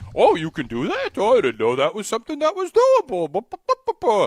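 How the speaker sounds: big, goofy, broad delivery. Acting out for Jason what he said when you wanted to sell tickets, in a Yogi Bear voice. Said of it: "What is that voice?".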